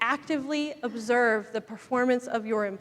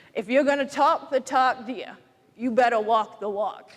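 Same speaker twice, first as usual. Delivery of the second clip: put-on broad, very thick Maine accent, laid on thick; 3 dB louder than usual. Sharing what a man has always told you, say it like he does, in a very thick Maine accent. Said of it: "in that very thick Maine accent".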